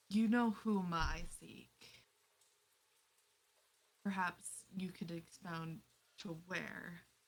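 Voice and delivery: secretive, discreet, confiding stage-whisper tone. A character moves closer to ask a personal question, in a hushed voice. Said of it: "in a more hushed voice ask".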